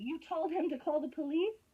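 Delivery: loud, high, angry yelling. Confronting another speaker about a recording, yelling. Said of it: "that's why I'm yelling at you".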